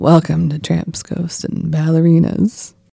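hushed, quiet late-night radio host delivery. A podcast host tries the show's intro like a radio show, late-night radio show voice. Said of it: "like a radio show where you're just in the dark".

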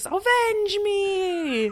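shrill, high shout with drawn-out "me". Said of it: "thanks for shouting".

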